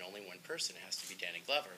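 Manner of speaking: ordinary delivery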